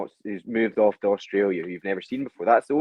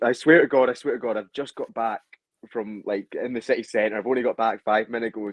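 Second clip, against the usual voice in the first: ordinary delivery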